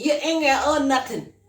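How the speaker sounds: accent from Guyana. Urging listeners to buy property: broad colloquial Guyanese speech. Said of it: "let me speak in Guyanese, colloquial".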